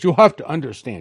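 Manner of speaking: put-on Russian accent. Quoting a Russian defector over lunch: imitating Stanislav Lunev's Russian accent. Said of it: "his Russian accent".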